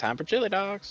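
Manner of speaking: very high, squeaky put-on nerd voice. Quoting a video game hero's line in an Urkel voice. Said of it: "you made it sound like an Urkel thing".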